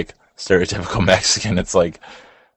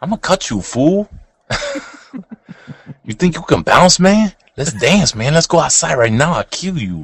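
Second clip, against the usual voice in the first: put-on over-the-top, ridiculous, very high-pitched Mexican accent; 9 semitones higher than usual. Imagining pulling a box cutter in the dairy section, the speaker uses a ridiculous Mexican accent. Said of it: "My Mexican accent is ridiculous".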